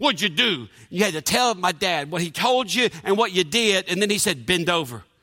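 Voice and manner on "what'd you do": talking through clenched teeth, jaw locked. Quoting the speaker's dad's question, Dirty Harry through-teeth voice. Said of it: "Like Dirty Harry showed up talking through his teeth".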